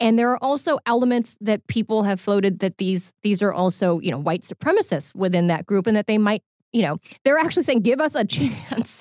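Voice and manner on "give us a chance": breaking into a laugh mid-phrase. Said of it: "I can't say this without laughing a little bit".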